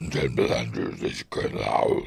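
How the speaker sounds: put-on deep voice. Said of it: "How was his voice so deep?".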